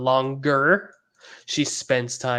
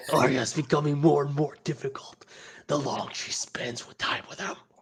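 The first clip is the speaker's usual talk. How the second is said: put-on harsh growl, quieter; 4 dB quieter than usual. Retelling how a boy suddenly turns into Batman: mock-menacing Batman growl. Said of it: "it's Batman all of a sudden".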